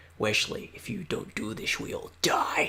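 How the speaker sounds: breathy, hushed whisper under the breath. Watching Wesley make a homemade grenade, the speaker whispers to him. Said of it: "just whispering like".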